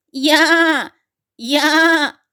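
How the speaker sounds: goat-like bleating cry, stretched long. Reading a story aloud, a character answers the master's shouted question, bleating. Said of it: "замекав Буль".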